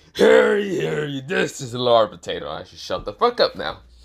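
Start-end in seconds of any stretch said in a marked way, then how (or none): 0.1-2.4 loud, rough, growling pirate voice. Narrating a what-if story, one character addresses another: Blackbeard voice. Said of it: "I tried to do the voice of Blackbeard".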